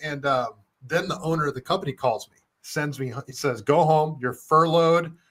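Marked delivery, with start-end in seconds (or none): 3.6-5.1 put-on angry voice, slower. Speaker retelling the company owner's call to them, imitating an angry boss. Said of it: "he's pissed off".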